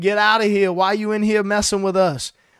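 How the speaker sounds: frantic, held-in put-on demon scream. Acting out what demons say when Jesus walks in: imitating demons screaming. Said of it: "they start screaming".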